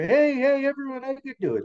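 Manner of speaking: squeaky small-voiced shout. Like a little animal who has been ignored and now pushes his thin voice louder, trying to be heard over the crowd. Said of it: "he had a little voice".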